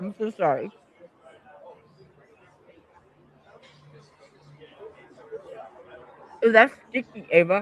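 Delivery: talking through a full mouth, chewing. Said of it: "these gummies take forever to chew".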